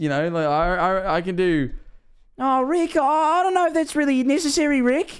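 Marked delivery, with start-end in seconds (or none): 2.4-5.2 stammering in a very high-pitched voice. Voicing the other character's nervous reply in the scene: imitating Morty. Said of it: "That does not sound like Rick".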